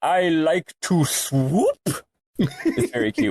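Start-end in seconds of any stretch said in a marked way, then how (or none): 0.0-1.8 cartoon-vampire Transylvanian voice. Describing a game's monster lines, quoting one in Draki's stereotypical Transylvanian voice. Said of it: "Transylvania-ass sort of stereotypical voice".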